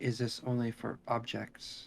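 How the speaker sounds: slow, sad, sorrowful half-whisper. Voicing a character asking a question while listening: half-whispering. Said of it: "And she whispers".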